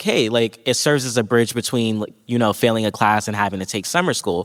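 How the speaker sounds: ordinary talk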